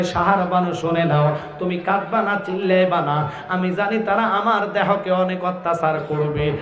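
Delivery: ordinary delivery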